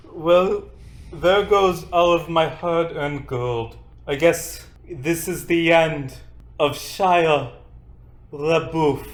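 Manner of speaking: French-accented sigh.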